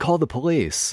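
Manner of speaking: put-on woman's yell. Retelling how the woman yelled out to someone else: imitating a woman yelling out. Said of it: "yelled out".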